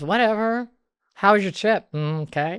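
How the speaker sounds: bored dismissive cat voice. Describing how her cat greets her after a trip, imitating a bitchy cat. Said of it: "how she's so bitchy".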